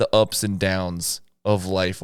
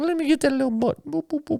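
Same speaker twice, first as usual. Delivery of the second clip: very high-pitched, squeaky, cutesy puppy voice. Imitating a girlfriend's little puppy voice. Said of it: "her puppy voice to me".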